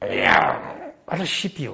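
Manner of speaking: deep, slow, creaky voice, words drawn out.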